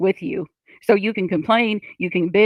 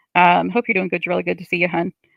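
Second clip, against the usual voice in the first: usual speaking voice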